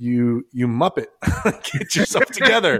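mock stern tone, laughing.

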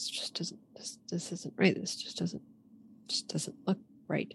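soft, uneasy, whispered muttering. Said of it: "You're, you're muttering to yourself a lot".

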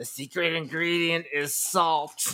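high-pitched animated cartoon woman's voice. Speaker quotes a line from The Simpsons; Simpsons character impression. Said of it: "That was a really Sometimes, good impression".

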